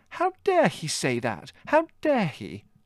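indignant, scandalised, outraged, high and drawn out. A woman reacts on hearing a man finds her boring, outraged. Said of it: "said Margot, outraged".

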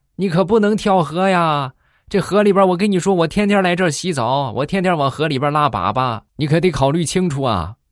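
very high bellow shouted through a megaphone. A man calls to a young woman at the river, shouting through a megaphone. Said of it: "就拿着喇叭就大喊".

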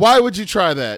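mock exasperated scolding. Imitating how mom would react, pissed off: imitating an angry mom. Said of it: "she'd be pissed".

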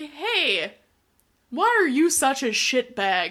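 high, loud, bright, cheery chirp. Retelling what Trent says to the kids: imitating Trent saying it with a smile. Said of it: "With, like, a smile on his face".

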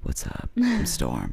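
very quiet little voice. Retelling meeting a guy named storm, imitating someone talking very quietly. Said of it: "he talked really quietly like this".

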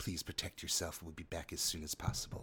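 hushed whispered words. Linabelle leaves a javelin with the woman in the cage, whispering. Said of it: "she just whispers to her".

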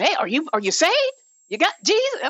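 put-on old church lady voice, high, loud hollering. A speaker recalls old ladies from years ago, imitating old ladies yelling. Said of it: "kind of yelling with a loud voice".

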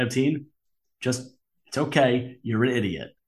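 calm, matter-of-fact, calmly delivered tone. Showing how a calm insult to a co-host sounds: calmly delivering an insult. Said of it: "so calmly".

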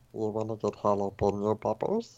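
creepy, eerie put-on voice. Speaker slips the voice friends hate into conversation: creepy put-on voice. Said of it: "it immediately makes it creepy".

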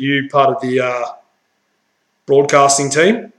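put-on deep voice. Retelling what a police officer said at the car window: imitating a deep-voiced cop. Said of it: "deep-voiced, you know, police".

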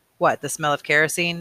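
ordinary delivery, nothing marked

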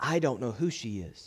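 hushed, very quiet, low murmured voice. Retelling how a daughter answered someone standing beside her: very low, soft voice. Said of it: "in a very low tone, softly speaking".

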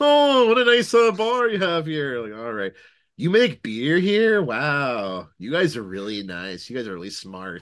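very loud, high-pitched, gushing, condescending, patronizing voice. Joking about how to act as a patron at a bar; mock patronizing praise. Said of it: "Go there and be just like".

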